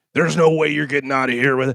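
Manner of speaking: rough gruff voice. Retelling how an audiobook narrator voiced a lawyer, Ernest's gruff lawyer voice. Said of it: "he'd do the voice".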